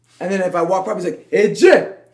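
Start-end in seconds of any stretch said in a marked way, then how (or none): 1.3-1.9 very loud, booming coach-like voice. Retelling what the rehab coach would say: imitating the coach's voice. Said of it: "you got the voice on point".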